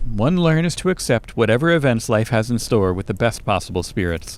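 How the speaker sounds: plain reading voice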